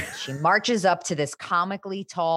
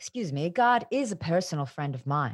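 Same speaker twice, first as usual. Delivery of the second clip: put-on old woman voice, quieter; 5 dB quieter than usual. Retelling what Grams said at the funeral, imitating Grams. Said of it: "That's not a Graham's impression".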